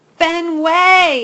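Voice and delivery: loud, high, drawn-out furious yell, Fenway stretched. Hattie holds Fenway at arm's length, yelling angrily. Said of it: "She yells louder and madder than ever".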